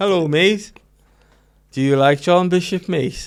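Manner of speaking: put-on Liverpool accent, pitched high. Greeting an imagined listener in a put-on voice: John Bishop impression. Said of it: "Is that a Liverpudlian accent or a Birmingham?".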